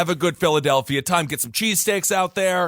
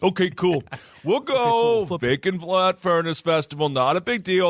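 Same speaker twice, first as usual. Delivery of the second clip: horrible, bad put-on Philadelphia accent. Speaker imitates locals reacting to an event's name, bad philadelphia accent. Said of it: "That's a horrible accent".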